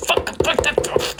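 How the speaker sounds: getting angry, frustrated. Struggling with a device that won't work, getting angry. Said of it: "I'm getting angry with it".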